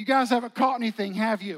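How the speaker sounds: loud jeering shout.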